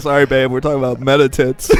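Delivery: ordinary delivery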